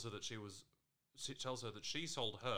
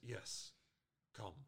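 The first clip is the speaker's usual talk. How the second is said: put-on creepy voice; 5 dB quieter than usual. Recapping a show scene, voicing a character's reply to Van: creepy Ty impression. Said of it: "Ty creepily replies".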